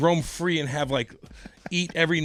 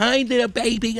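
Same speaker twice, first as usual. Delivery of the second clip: put-on high-pitched, silly, playful baby talk; 7 semitones higher, 4 dB louder than usual. Greeting the dog the way the speaker's dad used to, funny dog or kitty voice. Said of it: "do a funny dog or kitty voice".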